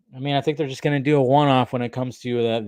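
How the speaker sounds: normal talking voice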